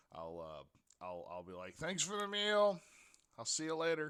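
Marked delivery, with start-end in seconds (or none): 1.7-4.1 loud, high yell through a mouthful of food. Playing a character leaving with food in mouth: yelling with food in mouth. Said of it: "coming out the door yelling at them, like, food still in mouth".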